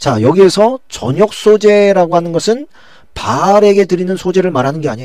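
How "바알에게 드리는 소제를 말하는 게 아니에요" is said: 바알에게 stressed, hit higher and louder. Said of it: "하나님께 드리는 소제를 말하는 거예요".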